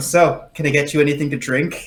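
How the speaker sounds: normal talking voice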